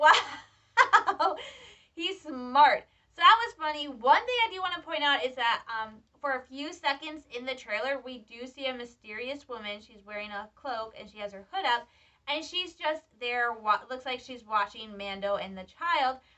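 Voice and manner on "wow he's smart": louder, laughing voice. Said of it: "I'm just sitting there laughing".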